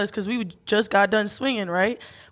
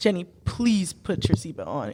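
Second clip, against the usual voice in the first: low, earnest, grave, dead-serious voice; 4 semitones lower than usual. Retelling what the driver said during the chase: imitating a serious tone. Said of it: "he looked at me so serious".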